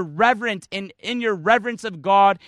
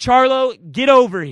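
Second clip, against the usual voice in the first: raised, slow, authoritative tone; 4 dB louder than usual. Showing how they call charlo to their side, raised commanding voice. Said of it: "just sort of raising my voice and demanding with authority".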